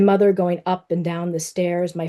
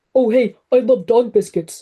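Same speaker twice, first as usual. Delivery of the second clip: daft, goofy, silly, playful put-on voice; 4 semitones higher, 4 dB louder than usual. The narrator's son jokes about the message their dog leaves behind: goofy voice. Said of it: "my son says in a goofy voice".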